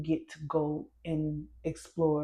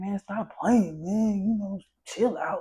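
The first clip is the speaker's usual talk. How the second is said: mock-mad, put-on angry voice; 5 semitones higher, 6 dB louder than usual. Describing a video, the speaker mimics a girl's boyfriend in the background: imitating an angry boyfriend. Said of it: "he's like in the background all mad".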